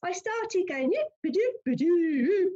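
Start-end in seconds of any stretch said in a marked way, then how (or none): 0.9-2.5 bad put-on Scottish accent, higher and louder. Retelling a failed attempt to speak to the deceased: bad put-on Scottish accent. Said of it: "speak to her in a Scottish accent".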